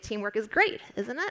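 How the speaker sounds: rising intonation at the end of the line. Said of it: "than if you say".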